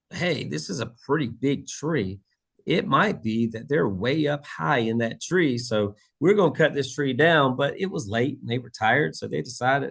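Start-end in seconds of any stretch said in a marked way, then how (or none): none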